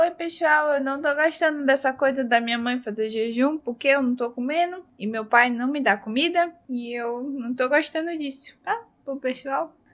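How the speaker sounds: put-on little pet dog voice. Showing her pet dog on camera, speaking as her pet dog. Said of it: "Dá oi pro pessoal. Fala".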